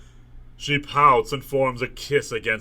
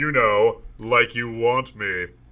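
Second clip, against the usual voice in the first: ordinary talk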